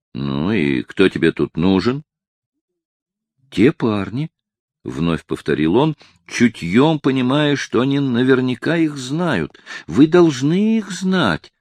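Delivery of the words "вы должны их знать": put-on hurt, offended, childlike tone, pitched up. A man being questioned at the police answers, like an offended child. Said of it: "тоном обиженного ребенка".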